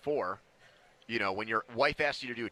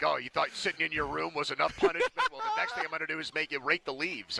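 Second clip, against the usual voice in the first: put-on angry dad voice, swooping pitch; 4 semitones higher than usual. Describing how Donnie sounds, speaker imitates a pissed-off dad. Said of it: "Donnie sounds like a pissed off dad".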